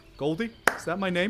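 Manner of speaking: high goldfish voice. Voicing a fish that can now speak, Goldie the goldfish voice. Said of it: "The fish just says".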